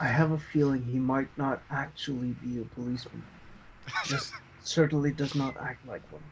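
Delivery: hushed, very quiet whisper. Speaking in character, whispering a suspicion to the rest of the group: whispering to the group. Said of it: "I'm whispering to the rest".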